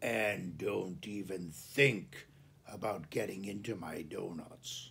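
low, hushed growl through the words. A man leaning into a pickup window gives a warning, in a low growl. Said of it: "He lowered his voice to a growl".

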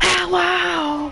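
high-pitched shout.

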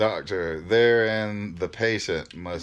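ordinary delivery, nothing marked

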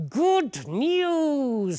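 very high, swooping kingly roar, "news" drawn out. The king rushes to the window and calls to the wise company, roaring. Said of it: "He roared to the wise company".

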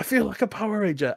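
put-on sudden, very high screamed outburst. Retelling a film scene where a guy screams out a line: imitating a scream. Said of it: "he just screams out".

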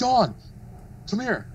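mock very high, shouted, yelled call. Tell how Kane called to your wife as she walked by his table, imitating someone yelling. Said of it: "he yells".

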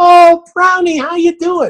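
high-pitched, animated, lively voice. Speaker showing how people shouldn't greet a dog: high-pitched animated voice. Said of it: "do not talk to my dog in a high-pitched, animated way".

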